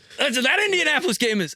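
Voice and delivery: shrill, very high screaming. Arguing about a pick on the Indianapolis game, screaming. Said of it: "sorry, I'm screaming".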